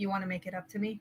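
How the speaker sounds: hushed, soft, said pretty quietly. Amaris, walking up with Nuri, says this to her pretty quietly. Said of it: "she's going to say this pretty quietly".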